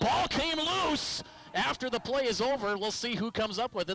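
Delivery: sudden, excited, alarmed shout, jumping up high.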